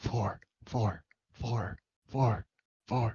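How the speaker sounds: quiet, hushed muttering under the breath to oneself. Speaker counts a man's laps while watching him circle, quietly muttering under breath. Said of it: "Just quietly muttering under my breath".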